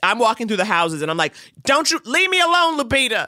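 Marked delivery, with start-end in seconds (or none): 1.6-3.3 high-pitched, pleading yelling. Walking through the houses, recalling shouting at the actresses: retelling own yelling. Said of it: "I'm like yelling at the actresses".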